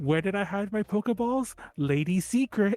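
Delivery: slow, drawn-out put-on girl voice. Quoting a swimmer trainer's line from the game: imitating swimmer girl character. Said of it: "one of the swimmers. She's all like".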